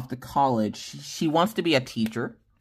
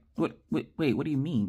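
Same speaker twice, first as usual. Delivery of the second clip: startled, taken-aback, caught off guard, thrown; 3 semitones higher, 5 dB quieter than usual. Retelling own reaction to a child's question: retelling being taken aback. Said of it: "taken aback because I was like".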